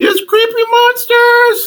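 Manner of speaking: very high, alarmed shouted yell. Game narrator voicing Bubbles, calling out to the group, yelling as Bubbles. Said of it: "you hear Bubbles yell out".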